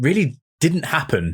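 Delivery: normal talking voice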